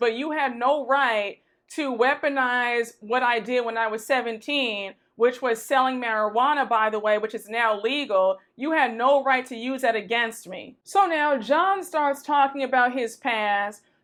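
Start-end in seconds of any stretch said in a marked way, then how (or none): none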